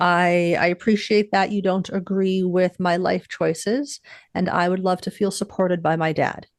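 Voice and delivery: ordinary delivery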